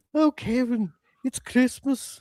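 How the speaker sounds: put-on Irish accent, high, slow, drawn out. Imitating a woman from a movie who calls to Kevin: imitating an Irish accent. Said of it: "she had, like, an Irish accent or something".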